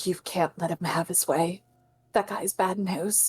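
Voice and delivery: soft, close character whisper. Voicing Barbie whispering into Arya's ears: character whispering. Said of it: "try and whisper into Arya's ears".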